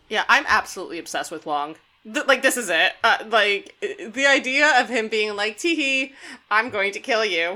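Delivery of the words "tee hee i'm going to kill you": giggly fake-innocent villain voice, cute with evil leaking through. Joking about a cartoonish villain, imitating Wong as a fake-innocent villain. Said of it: "so badly hiding him being just, like, a deep evil dickbag".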